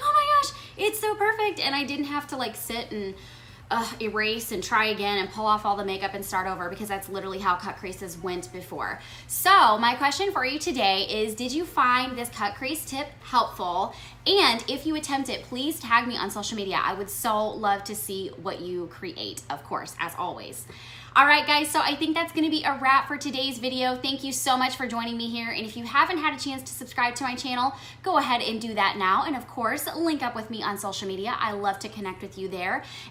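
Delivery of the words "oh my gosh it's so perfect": very high, thrilled, giddy squeal. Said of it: "I was freaking giddy".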